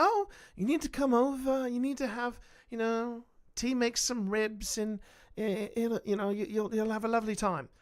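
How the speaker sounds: put-on refined New Zealand accent. Telling a story, imitating Pip inviting a Kiwi over, in Pip's refined New Zealand accent. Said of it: "Pip has a very refined New Zealand accent".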